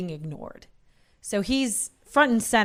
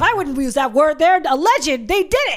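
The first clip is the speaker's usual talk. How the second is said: heated, combative, frustrated arguing yell; 8 semitones higher, 8 dB louder than usual. Recounting a man who snatched the paper and argued with it, retelling a frustrated yell. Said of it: "like he's just yelling".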